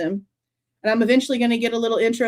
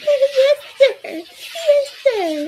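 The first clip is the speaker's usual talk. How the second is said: very high, slow, dumb, stupid little voice. Speaker mocking a girl they cannot stand, in a mocking stupid little voice. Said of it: "That stupid little voice".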